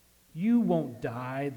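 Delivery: hissing, serpent-like voice. Reading the garden story aloud, the serpent answers the woman: hissing serpent. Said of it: "the serpent hissed".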